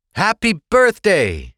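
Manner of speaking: very high, loud yell. [name], [name] and [name] call out together, yelled. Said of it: "and [name] yelled".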